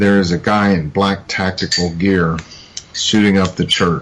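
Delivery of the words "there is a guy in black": plain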